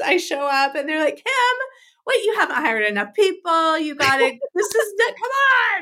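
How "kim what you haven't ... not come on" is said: high, pitched-up yell. Retelling friends working in the store greeting a late arrival: imitating friends yelling. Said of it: "they're, like, yelling at me".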